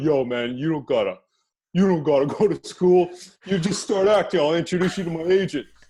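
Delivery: loud, high, casual friendly way of talking. Retelling what friends kept saying about acting: imitating friends' way of talking. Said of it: "how your friends talk like this".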